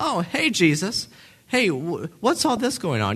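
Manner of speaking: mock breezy, casual, nonchalant and offhand. Picturing meeting the risen Jesus on the road: mock nonchalant greeting. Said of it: "kinda nonchalantly".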